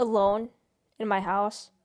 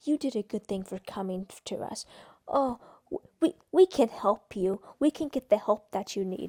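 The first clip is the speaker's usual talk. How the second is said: put-on patronizing, condescending, talking-down tone; 2 semitones lower, 3 dB quieter than usual. Imitating people who offer her help: imitating a condescending tone. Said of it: "they say it in a condescending".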